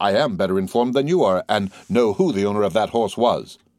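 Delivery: ordinary delivery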